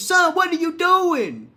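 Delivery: loud hollering yell. Retelling a wrong turn on the way to the store: imitating mom yelling. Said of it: "my mama yelled at me".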